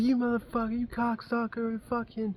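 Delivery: enraged, shrill, very high, furious screaming. Retelling a roadside confrontation, acting out the other person's angry words, imitating someone screaming. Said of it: "He's like screaming".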